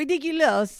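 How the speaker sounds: put-on gruff older French woman voice. Showing how a screenplay character sounded in the mind: gruff older french lady voice. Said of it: "this gruff, like, older French lady".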